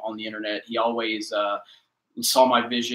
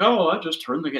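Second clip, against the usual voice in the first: high, mocking, sarcastic throwaway tone; 6 semitones higher, 4 dB louder than usual. Explaining that YouTube takes work, quoting own sarcastic line: imitating own sarcastic tone. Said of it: "the sarcastic way I say".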